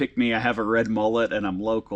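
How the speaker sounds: normal talking voice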